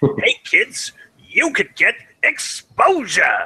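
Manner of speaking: very high, bright, salesy pitch. Mocking how media companies pitch unpaid work to newcomers: Stan Lee voice. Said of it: "let's see if I can get the right Stanley voice for this".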